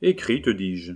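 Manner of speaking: plain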